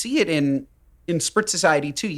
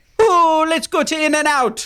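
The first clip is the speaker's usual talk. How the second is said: fake Jamaican accent, higher and louder; 11 semitones higher, 5 dB louder than usual. Joking about where to go: put-on jamaican accent. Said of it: "that was Jamaican".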